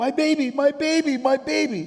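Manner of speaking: very high, very loud, piercing scream. Retelling what a lady shouted at them, imitating a woman screaming. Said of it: "and she's screaming".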